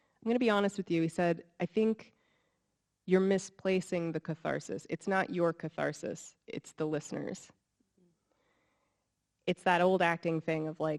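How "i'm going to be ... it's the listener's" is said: ordinary talk, nothing marked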